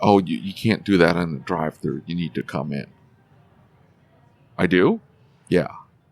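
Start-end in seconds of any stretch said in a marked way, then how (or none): none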